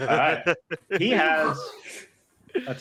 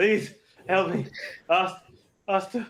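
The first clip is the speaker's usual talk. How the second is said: pained scream, higher pitch; 3 semitones higher than usual. Voicing the bad guy calling out to his master, screaming in pain. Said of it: "He like screams out uh, in pain".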